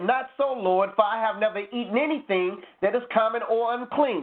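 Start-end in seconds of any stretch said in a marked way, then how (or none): none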